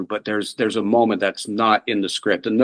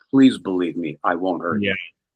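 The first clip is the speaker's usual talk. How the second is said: put-on stammering in a choked, strained voice; 3 semitones lower than usual. Retelling a character's delivery in a scene: imitating a stammering, choked plea. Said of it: "the way he stammers and tries to swallow".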